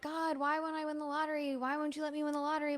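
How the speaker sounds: imploring, beseeching, begging plea. Retelling a joke about people praying to win the lottery, mock begging and pleading. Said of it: "they're just like begging and pleading".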